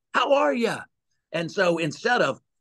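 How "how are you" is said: excited voice jumped up an octave, very high. Retelling a phone call greeting, imitating dad's excited higher-pitched greeting. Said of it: "It's the octave goes up".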